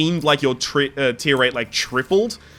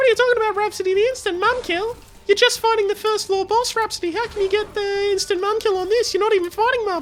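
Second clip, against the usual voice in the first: very high, squeaky voice, way up top. Voicing someone talking to Rhapsody during a game: really high voice. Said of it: "I'm gonna give you a really high voice for this".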